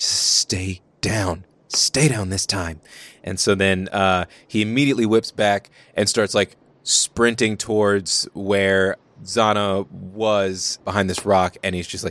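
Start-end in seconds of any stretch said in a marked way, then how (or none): 0.0-2.8 low muttering under the breath. Voicing a character staring at a fallen ally: under his breath. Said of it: "and then under his breath".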